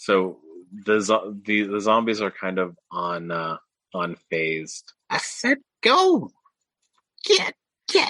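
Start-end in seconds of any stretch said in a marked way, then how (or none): 5.8-8.1 tiny, furious creature voice, squeaking very high and shrill. Voicing a small lizard creature yelling at zombies: angry little creature voice. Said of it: "he's very angry".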